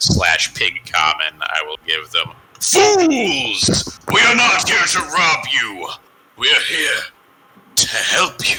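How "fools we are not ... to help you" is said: grand, pitched-up, swooping wizard-style voice. Speaking in character to the people you appear before, booming voice. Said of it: "in my best booming voice".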